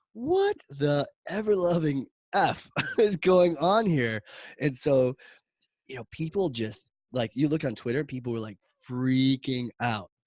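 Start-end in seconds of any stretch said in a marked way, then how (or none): 0.2-4.2 stunned outrage, slow, drawn out and high pitched. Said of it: "We're like".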